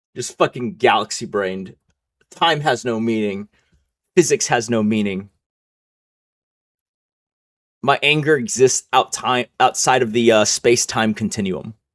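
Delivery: ordinary delivery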